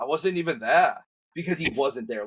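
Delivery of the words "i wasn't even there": higher-pitched fake British accent. Retelling a story in which the wrestler is imitated: British accent imitating Davey Boy Smith. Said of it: "he always puts on the British accent for him".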